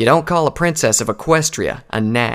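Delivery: ordinary delivery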